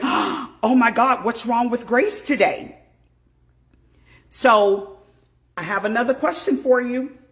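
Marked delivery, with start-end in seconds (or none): 0.0-2.8 mock-shocked, put-on scandalized pearl-clutching tone. Mimicking people reacting when Grace crashes out, mock-scandalized. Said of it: "clutch their pearls".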